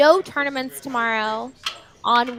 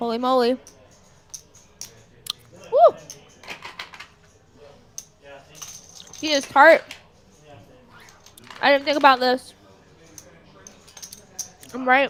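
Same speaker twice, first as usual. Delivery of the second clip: talking while chewing, mouth full. Tasting a Starburst on stream, chewing while talking. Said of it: "Chewing in y'all's ears".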